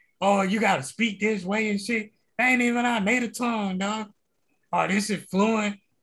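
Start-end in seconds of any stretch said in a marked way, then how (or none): none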